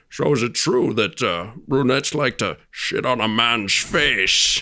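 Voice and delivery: suave, slow, charming, drawn-out delivery. Retelling the actor leaning over to a lady: Sean Connery charming impression. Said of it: "acting like he's being James Bond charming".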